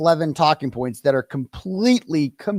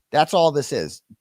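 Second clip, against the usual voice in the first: ordinary talk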